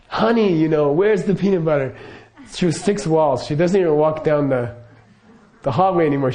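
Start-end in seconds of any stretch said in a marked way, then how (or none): 0.1-1.9 lightly called-out voice, projected at distance. Recounting how she calls to him from the couch, retelling her yell. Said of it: "she just yells".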